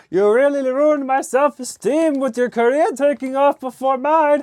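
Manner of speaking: very high-pitched puppet voice. Joking about a career taking off first: Kermit the Frog voice. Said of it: "that's kinda turned into Kermit the Frog there".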